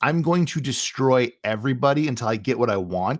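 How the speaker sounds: ordinary talk, nothing marked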